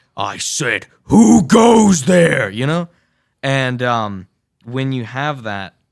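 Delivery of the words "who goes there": imposing booming voice, very loud and high. Recalling voicing the figure behind the big face, in a big booming voice. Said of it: "you hear this a big booming voice".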